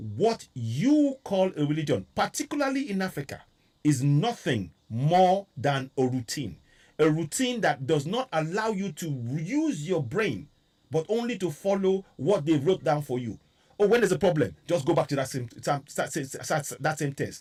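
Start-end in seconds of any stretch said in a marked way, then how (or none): 0.0-6.6 slow, measured, deliberate word-by-word delivery. Speaker repeats their point so listeners take it in, speaking slowly. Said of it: "Let me say that again slowly".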